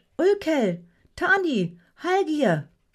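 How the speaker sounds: high, swooping call out through laughter. Narrator reads a rowing woman recognizing the men in the boat, calling out laughing. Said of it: "rief sie lachend".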